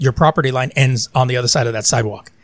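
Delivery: ordinary delivery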